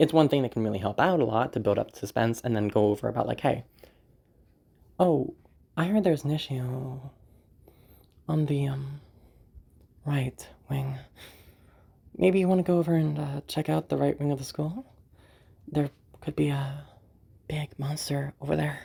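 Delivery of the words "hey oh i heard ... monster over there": lightly tossed-off, undramatic voice. A speaker demonstrates pauses for building suspense, lighter voice. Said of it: "a little bit lighter on my voice".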